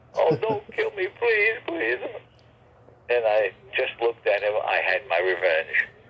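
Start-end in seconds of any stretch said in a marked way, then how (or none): 0.1-2.0 put-on, very high little-boy blubbering, sobbing. Retelling how the man begged while on the ground: imitating someone crying and sobbing. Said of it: "he fell to the ground crying and sobbing".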